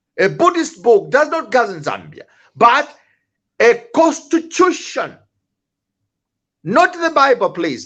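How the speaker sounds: mildly heated, a bit angry tone. Criticizing reverend politicians, the speaker admits to being a bit angry. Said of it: "I'm a bit angry".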